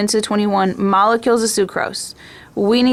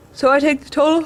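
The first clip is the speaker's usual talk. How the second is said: words pulled out of shape by a yawn, pitched up; 6 semitones higher than usual. Working through a chemistry mass calculation, the speaker talks through a yawn. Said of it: "sorry I'm yawning".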